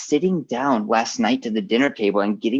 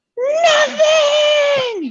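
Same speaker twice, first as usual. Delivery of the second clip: put-on very high, shrill, drawn-out toddler scream; 6 dB louder than usual. Retelling a small child's answer to a question: imitating a child screaming. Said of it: "she's just screaming at my wife's face".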